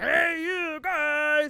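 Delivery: comic, grunty, funny high voice. Correcting how a famous movie line sounds: grunty, funny voice. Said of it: "it's more like a grunty, funny".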